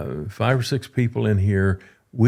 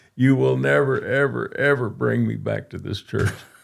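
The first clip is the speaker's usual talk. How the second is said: put-on crying, tearful voice, higher pitch; 3 semitones higher than usual. Retelling what Marilyn said crying at the car: imitating Marilyn crying. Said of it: "she's crying".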